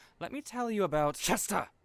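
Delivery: sudden, carried-away, high, loud yell. A character gets carried away mid-conversation, yelling. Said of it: "I'm sorry for yelling".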